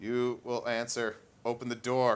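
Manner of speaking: weird, loud, flat, almost robotic computerized voice. The storyteller voices an unseen speaker the players hear in a weird, almost computerized voice. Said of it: "weird, almost computerized voice saying".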